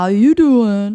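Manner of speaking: very loud, belted, big talk-show host delivery. Mentioning Wendy Williams, doing a Wendy Williams 'how you doing' impression. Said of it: "she's the one that would be like".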